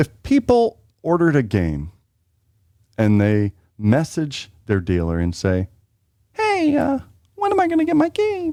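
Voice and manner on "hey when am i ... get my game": eager, excited, voice shooting very high. Acting out a customer asking their dealer about a game: imitating an excited customer, voice going up. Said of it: "I don't know why they sound like that".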